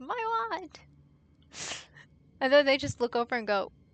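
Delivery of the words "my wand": very high, sudden triumphant battle shout. Retelling how someone yells in the game: imitating someone yelling. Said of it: "And just yells".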